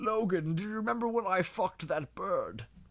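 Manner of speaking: put-on frail, rambling old man voice. Doing the professor rambling on his deathbed, Logan Professor X impression. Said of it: "my Logan Professor X impression".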